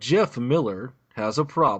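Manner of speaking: slow, dramatic movie-trailer narrator voice. Reading a first line in a dramatic movie-trailer voice. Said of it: "I'm gonna try to do my uh, movie trailer voice thing".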